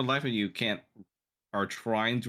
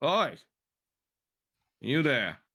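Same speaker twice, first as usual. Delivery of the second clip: high-pitched, raised calling-out voice; 6 semitones higher, 3 dB louder than usual. Narrating a scene and voicing the sheriff as he calls out. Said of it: "you hear the sheriff call".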